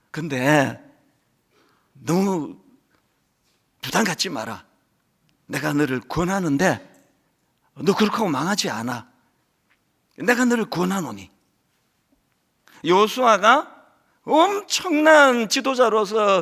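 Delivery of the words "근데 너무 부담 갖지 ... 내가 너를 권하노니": gentle, caring, soft, warm fatherly voice. Retelling the Lord's words after a stern rebuke: put-on warm fatherly voice. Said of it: "톤이 확 바뀌어가지고 너무너무 따뜻하고 자상한 아버지의 목소리로".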